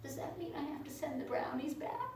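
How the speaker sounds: very quiet, meek, tiny, mild little voice. Retelling a phone call with another agent: imitating Steve Latif's little mild voice. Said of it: "this little mild voice from Steve Latif".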